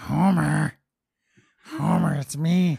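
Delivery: put-on cartoon housewife voice. Doing a voice while being teased about it: Marge Simpson voice. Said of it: "You sound Marge".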